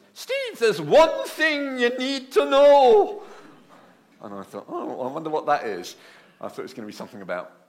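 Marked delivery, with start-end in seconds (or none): 0.2-3.3 put-on Scottish accent, very high and very loud. Retelling what a scottish woman in a hoist said to him, in a scottish accent. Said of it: "She talked like this".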